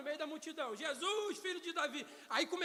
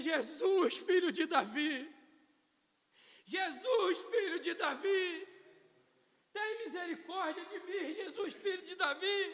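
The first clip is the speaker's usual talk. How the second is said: put-on loud, slow weeping voice, each line drawn out; 5 dB louder than usual. Acting out a blind beggar crying out to Jesus: acted tearful plea. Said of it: "a lágrima começava a correr".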